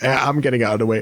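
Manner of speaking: worn-out, tired, drained giant voice, energy spent. Voicing a freed goliath thanking the player: tired, drained goliath voice. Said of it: "drained of energy".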